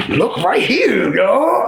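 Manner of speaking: weird, slow, swooping, condescending talking-down voice. Retelling what the opposing speaker said: imitating a weird, condescending voice. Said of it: "that weird, strange voice".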